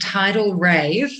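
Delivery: strong, heavy emphasis placed on the word Rave. Naming their band so people stop hearing 'Wave': strong emphasis on 'Rave'. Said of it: "I say that with such emphasis because people keep thinking it's Tidal Wave".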